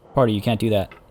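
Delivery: ordinary delivery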